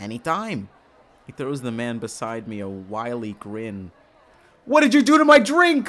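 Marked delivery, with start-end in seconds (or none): 4.7-5.9 shouting, higher and louder. Reading a line of dialogue aloud from the story: yelling. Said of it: "I keep yelling".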